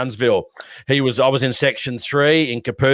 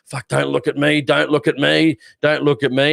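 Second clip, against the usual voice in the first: frightened, panicked, desperate, repeated pleading tone; 3 semitones higher than usual. Speaker recounts a man screaming in someone's face, acting out own panic. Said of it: "he's screaming in his face".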